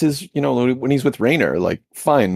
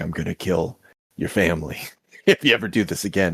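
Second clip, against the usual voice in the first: soft, low, hushed half-whisper under the breath; 5 semitones lower, 5 dB quieter than usual. Recounting the end of a series scene, giving the man's line as a retold half-whisper. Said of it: "he just whispers like".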